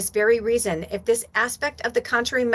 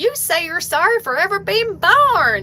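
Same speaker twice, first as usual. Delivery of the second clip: raised, pitched-up Tennessee Southern drawl; 8 semitones higher, 5 dB louder than usual. Quoting a friend answering her question, in a Southern drawl. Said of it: "like Southern drawl".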